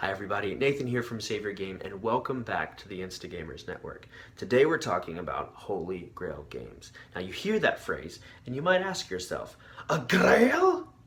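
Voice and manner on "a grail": shrill, very high, very loud bellowed cry. Asking what a grail is: Tim the Enchanter voice. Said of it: "In your best Tim the Enchanter voice".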